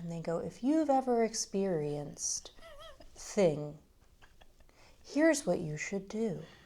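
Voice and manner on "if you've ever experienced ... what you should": mocking therapist tone, lower and quieter. Mocking online pseudotherapy reels: imitating a therapy voice. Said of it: "they turn on the therapy voice and they start to lean in".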